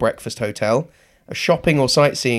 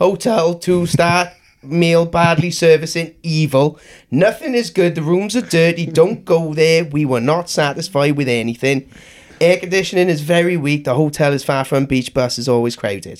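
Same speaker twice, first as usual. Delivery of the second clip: Welsh Valleys accent; 5 semitones higher than usual. Rereading a bad hotel review aloud after a request: thick Valleys accent. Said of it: "someone with a really thick Valleys accent".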